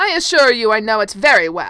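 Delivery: strident, very loud, insistent voice. Lord Wilden answers the prince as nearby guests overhear, strident tone. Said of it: "Lord Wilden's strident tones".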